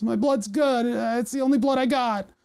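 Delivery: put-on tearful weepy voice. Retelling a joke story where staff trash their blood: mock crying. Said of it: "I got tears streaming down my face".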